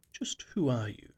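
pointed, uneasy, ill-at-ease tone. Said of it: "I demanded, feeling most uneasy".

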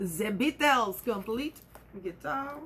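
really bad put-on French accent. Showing off an old guitar book, reading its title: really bad French accent. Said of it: "That is my really, really bad French accent".

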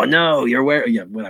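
put-on Manchester accent all the way through. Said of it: "Insert Mancunian accent".

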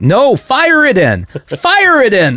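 put-on very high, sing-song, swooping, drawn-out yell. Imagining a man shaking his fist through the window at a recording, imitating Bill Alexander yelling. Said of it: "just yelling".

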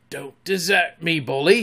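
whispering hoarsely. Reading a story aloud, he pleads to his slipping ego in a hoarse whisper. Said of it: "he whispered hoarsely to it".

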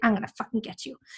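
mock angry wasp voice. Voicing an angry-faced wasp for a laugh: mock angry wasp voice. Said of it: "It's so angry with life. It's like".

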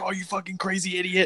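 very high-pitched screaming outburst, cursing.

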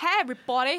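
loud put-on American accent. Joking about how the other speaker will talk later: put-on American accent. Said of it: "You're gonna talk so, like, American".

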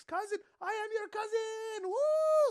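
very high, slow, drawn-out hollering.

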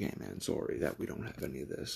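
hushed, very quiet whisper under the breath. Retelling what a friend said at a birthday party: imitating a whisper. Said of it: "he just kinda whispered".

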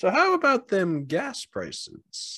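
very high pitch, swinging, slow delivery. Joking about gas prices as a stand-up setup: Jerry Seinfeld voice. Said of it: "a Jerry Seinfeld setup".

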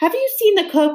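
frantic, desperate, high-pitched pleading. Reading a story, a character pushing against a pig asks about the cook, desperate. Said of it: "asked Jack desperately".

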